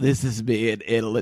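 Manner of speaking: imitated sick-sounding voice. Imitating someone narrating while sick: imitating her deep sick voice. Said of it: "This is the voice she was using".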